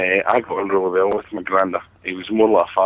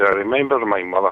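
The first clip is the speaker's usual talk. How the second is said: Irish accent, put-on and laid on thick. Retelling what a man said when asked about his granny, in a deep Irish voice. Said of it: "Deep Irish voice".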